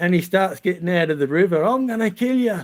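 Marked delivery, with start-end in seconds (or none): 1.6-2.6 high, raging, furious screaming yell. Retelling how a friend pushed into the river screamed: imitating someone screaming and yelling. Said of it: "he starts screaming and yelling at me".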